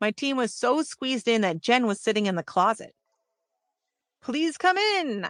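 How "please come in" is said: dramatic, theatrical flourish. Reading aloud, inviting a visitor into a tiny dressing room: dramatic flourish. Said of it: "with dramatic flourish".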